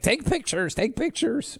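very high-pitched voice. Retelling what the producer always says: impression of Producer Allie. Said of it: "That's my, my, uh, impression of Producer Allie".

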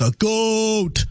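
goat with slight rise, drawn out, long fall. Teaching a learner to say a word, the speaker demonstrates: drawn-out rise then fall. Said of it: "So I'll demonstrate".

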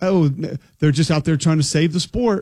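plain

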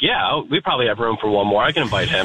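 ordinary talk

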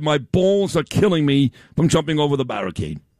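plain

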